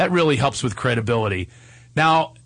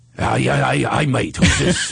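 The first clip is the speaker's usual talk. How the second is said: rough, slow, drawled, creaky voice. Acting out answering a phone call, playing Brian. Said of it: "So you can play Brian".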